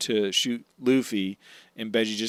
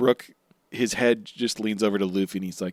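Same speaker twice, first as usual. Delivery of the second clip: normal talking voice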